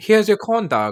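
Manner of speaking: put-on British accent. Narrator voices the corn dog stand vendor handing over a corn dog, British accent. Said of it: "the man behind it with a British accent".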